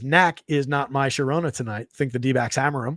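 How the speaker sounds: normal talking voice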